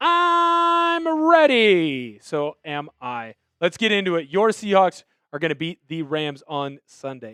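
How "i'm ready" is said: squeaky, high, bouncy cartoon voice, "I'm" stretched out. Host relaying the producer's answer on air: SpongeBob voice. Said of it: "in a SpongeBob voice".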